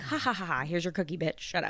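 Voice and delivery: mocking fake laughter, dismissive. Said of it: "Be like".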